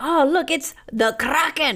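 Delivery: put-on loud, high, failed Irish accent drifting into Scottish. Retelling a failed attempt at an Irish accent, bad Irish accent. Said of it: "desperately trying to do an Irish accent".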